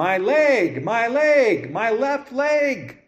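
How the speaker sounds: very slow, high, drawn-out, repeated rising yell. Retelling how an injured sister who couldn't get up kept yelling: imitating someone yelling. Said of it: "she just kept yelling".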